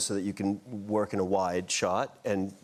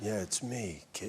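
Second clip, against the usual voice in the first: soft, breathy, intimate bedroom voice; 8 dB quieter than usual. Showing why trying the voice felt inappropriate, breathy low bedroom voice. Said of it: "a very breathy, low-register bedroom voice".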